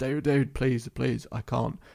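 mock begging, pleading tone. Retelling a woman's words to the speaker, acting out her begging. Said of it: "And she's begging".

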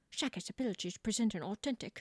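put-on quiet old-fashioned English accent. Asked by the other player to do Keira Knightley, Keira Knightley impression. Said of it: "you sound like you should be on like Downton Abbey".

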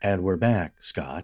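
put-on comforting AI voice. Coming back from a break, greeting a fellow speaker: [name] smooth AI voice. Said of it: "Is that your comforting AI voice?".

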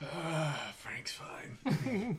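soft, mumbled mutter under the breath, half to oneself. In character, commenting on a party member's new eyes: muttering under breath. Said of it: "Under my breath".

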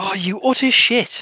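burst of real, furious anger. Taking a turn to choose, checking whether the year is still available, an angry outburst. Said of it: "The absolute anger in the voice".

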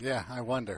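soft, dry, level, flat deadpan. Replying to a question about a relationship, deadpan. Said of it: "You're deadpan".

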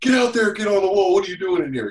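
loud, high-pitched screaming voice. Retelling how a foreman screamed at a worker in a construction trailer: imitating a scream. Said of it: "my foreman screamed at him".

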